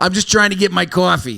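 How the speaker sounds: put-on Boston accent, played for laughs. Repeating a friend's line about getting coffee; boston accent. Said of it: "That's Boston".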